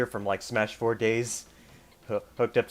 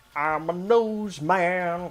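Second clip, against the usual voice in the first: very slow, drawn-out, slightly high-pitched character voice; 7 semitones higher than usual. Describing a Kirby enemy from the subbed version: Nose Man voice. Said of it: "he actually has a voice, and he goes like".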